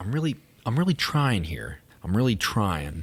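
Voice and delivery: plain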